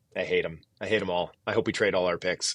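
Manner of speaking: play-acted, dry, expressionless flat deadpan. Retelling what a director of amateur scouting said: imitating a deadpan remark. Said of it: "and he deadpan".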